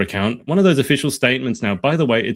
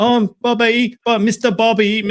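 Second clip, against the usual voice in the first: put-on unhinged, crazy-sounding voice, higher pitched; 12 semitones higher than usual. Retelling how they talk to their cat: imitating own unhinged cat talk. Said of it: "like a completely unhinged, crazy person".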